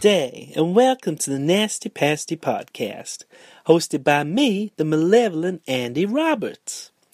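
slow, drawled, put-on New Orleans accent. A podcast host opening an episode, attempting a New Orleans accent. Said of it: "Tried to do a New Orleans accent there".

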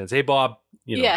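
put-on Boston accent. Describing minor movie characters, imitating them in a heavy Boston accent. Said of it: "speaking with their heavy Boston accents".

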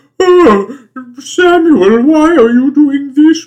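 put-on very high, very loud, shrill, slow, drawn-out British old lady. Describing how a woman's voice sounds, the speaker imitates her: overacted crabby old british woman. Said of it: "like a British woman in a play overacting as an old crabby British woman".

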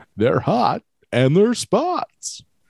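very high, sing-song, swooping infomercial sales voice. A speaker repeats their line about hot spots in an infomercial voice. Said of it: "That's my info commercial voice".

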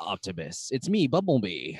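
swooping, animated robot voice with wide pitch swings. Retelling a movie fight scene, imitating Bumblebee. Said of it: "And then Bumblebee is like".

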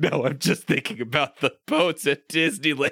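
put-on high, sobbing cry like a small child. Retelling his reply when others consoled him, imitating him crying like a little kid. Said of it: "he cries like a little kid".

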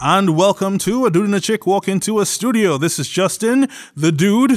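accent from Trinidad. Podcast host welcoming listeners and introducing himself, in a Trinidadian accent. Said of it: "speaking with his Trinidadian accent for no particular reason".

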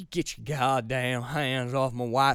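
low put-on Alabama accent, approximate. Doing a movie line in an alabama accent. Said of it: "That's basically an Alabama accent".

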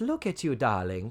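practised, polished drawl in a countess voice. Retelling a guest star's line: Zsa Zsa Gabor impression. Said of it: "my expert, perfect Zsa Zsa Gabor impression".

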